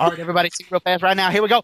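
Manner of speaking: feigned fast chatter. Retelling how a man talked fast in lulls between lyrics, imitating rapid talking. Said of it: "he would really fast say something".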